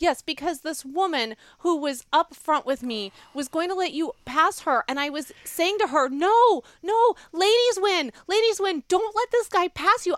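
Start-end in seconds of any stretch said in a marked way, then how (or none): 6.1-10.2 raised, loud, high, insistent yelling. Retelling words yelled at another driver during a go-kart race: imitating own yelling. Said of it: "I'm yelling this at her as we're driving".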